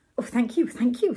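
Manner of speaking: plain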